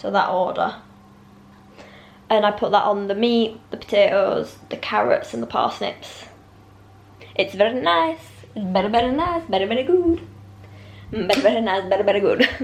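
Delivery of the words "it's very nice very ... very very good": put-on heavy, laid-on Spanish accent. While describing how you cook meat and vegetables, slip into the Rafa Nadal impression you often do. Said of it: "That's my Rafa Nadal impression".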